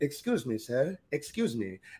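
small, soft, little put-on European accent. Retelling how a European woman called out behind him, in a little European voice. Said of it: "I hear this little European voice".

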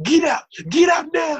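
very high, loud, fed-up, frustrated shout. Imitating a teacher in class getting frustrated: imitating a frustrated teacher shouting. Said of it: "they used to get really frustrated".

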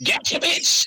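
jokey, celebrity-style gotcha, landed like a punchline. Imagining someone popping out of a backpack: Dave Chappelle voice. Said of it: "have Dave Chappelle voice go".

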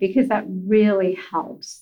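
plain

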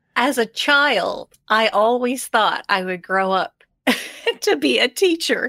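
words choked out through laughter. Recalling a childhood wish to become a teacher, laughing while speaking. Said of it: "I'm laughing and choking on that word now".

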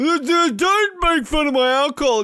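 put-on slow, sloppy drunken slur, "don't" drawn out. Acting out how a man speaks when drunk, to contrast with how calm he is now. Imitating a drunk, slurred voice. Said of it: "I love how he's so calm".

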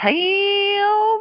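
put-on heavy, high Southern accent, Tim drawn out long. Imitating how a cousin says a name: imitating Lynn's deep Southern accent. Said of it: "It just stretches out".

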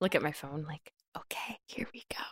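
speaking in a whisper. Muttering aside while looking at a phone: whispering. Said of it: "I feel like you're whispering a lot today".

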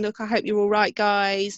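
ordinary delivery

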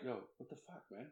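soft unvoiced whisper. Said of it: "like, whisper, like".

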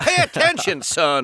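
cartoon rooster character voice. Listing the Looney Tunes voices they used to do, the speaker does Foghorn Leghorn voice. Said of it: "Foghorn Leghorn".

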